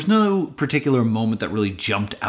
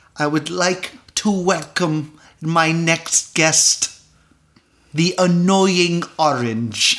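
weird, lofty voice with an air of prestige. Playing a talk show host welcoming a guest: John Malkovich voice. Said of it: "that weird voice and that prestige".

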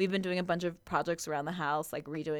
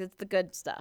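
usual speaking voice

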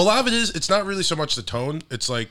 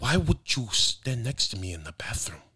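fed-up Italian gangster-movie tone; 4 dB quieter than usual. Trying to imitate Sebastian's stereotypical Italian voice, a fed-up Sebastian impression. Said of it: "pretend you're fed up with everything".

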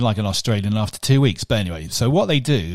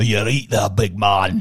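put-on Scottish accent; 3 semitones lower than usual. Showing off accents on a podcast, doing the Scottish accent again. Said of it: "What about the Scottish again?".

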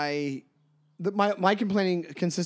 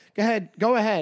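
polite tone in a New York accent; 4 semitones higher than usual. Asked to perform it, showing the New York "go ahead". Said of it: "The "go ahead" is a New York thing".

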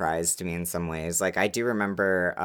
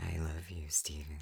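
put-on creepy voice, hushed, very quiet; 2 semitones lower, 14 dB quieter than usual. Joking about staring at an author's photo: put-on creepy voice. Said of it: "I'd said that in a creepy voice".

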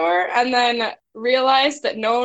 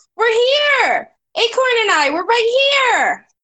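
very high in-character yell, stretched long; 11 semitones higher, 4 dB louder than usual. Playing a character calling out to the others: in-character yell. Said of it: "I'm gonna yell".

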